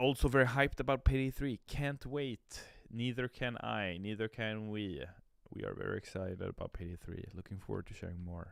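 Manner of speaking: ordinary talk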